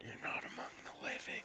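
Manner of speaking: hushed, very quiet, barely audible whisper. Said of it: "You're gonna have to speak up".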